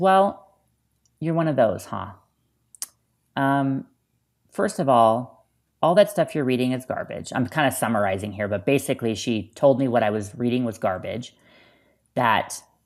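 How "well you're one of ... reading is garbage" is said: normal talking voice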